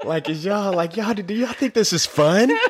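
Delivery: high, whiny exasperation through a laugh.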